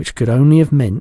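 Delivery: plain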